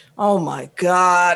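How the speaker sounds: mock-upset, put-on upset man's voice. Retelling how a man behind them at the movies reacted, imitating an upset man. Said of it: "he was upset".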